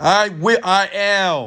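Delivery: very high, loud, screamed with certainty. A speaker shows listeners how to scream their affirmations, screaming with certainty. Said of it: "you have to scream".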